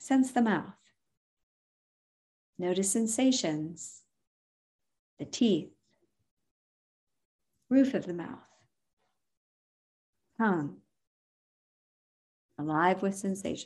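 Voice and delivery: phrases delivered with pauses between each one. Contrasting a too-fast awareness instruction with a paused one, slow with pauses between phrases. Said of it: "Do you see how I'm pausing there?".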